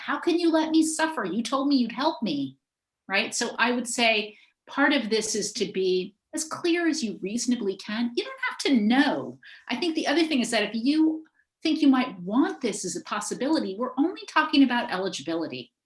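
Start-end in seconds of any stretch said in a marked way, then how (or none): 0.0-2.6 play-acted, desperate screaming near the end. Recounting a patient at the very end of life, retelling a patient screaming. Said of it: "he's screaming".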